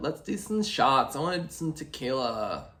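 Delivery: put-on airheaded, ditzy party-girl voice. Showing off a voice she can do, in a dumb blonde voice. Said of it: "a very accurate, dumb blonde voice".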